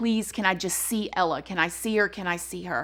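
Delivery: put-on pleading, begging tone. Retelling how a mother begged investigators to let her see her daughter: imitating someone begging. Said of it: "she was begging".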